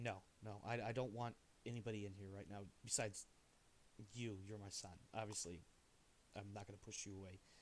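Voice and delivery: soft, frustrated voice.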